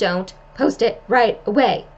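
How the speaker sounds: motherly, parental voice. Giving a tip about posting, the speaker slips into a mom voice. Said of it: "That was me using my mom voice".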